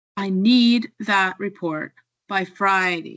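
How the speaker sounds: need and Friday stressed, hit harder. Listening lesson example sentence, said with stress on need and friday. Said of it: "Notice how need and Friday are stronger and louder".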